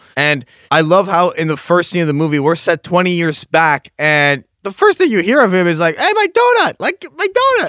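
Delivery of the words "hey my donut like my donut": put-on very high, childish squealing cry. Retelling the first line heard from Vash in the movie: imitating childish Vash. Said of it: "that's that childish nature of his".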